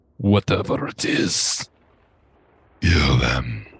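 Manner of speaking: very low, rattling giant voice. Game master voicing orders from the chamber's far end; deep, rattling voice. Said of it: "a deep, rattling voice usher out orders".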